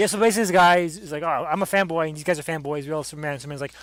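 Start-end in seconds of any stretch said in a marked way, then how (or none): none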